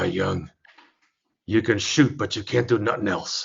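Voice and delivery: low, gravelly voice. Retelling the only thing Red ever said to him: Red's gravelly voice. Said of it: "He's got that gravelly voice and an unlit cigar".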